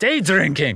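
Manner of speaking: broad Scottish brogue, laid on thick. Retelling what he kept calling out at a birthday celebration, thick Scottish accent. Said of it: "in this thick Scottish accent".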